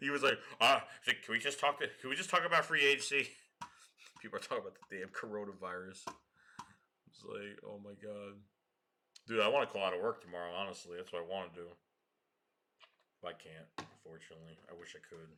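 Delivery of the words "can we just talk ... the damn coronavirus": ordinary talk, nothing marked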